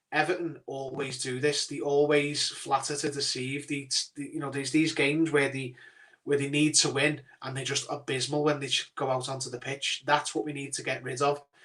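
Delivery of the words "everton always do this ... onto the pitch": usual speaking voice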